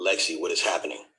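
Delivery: ordinary talk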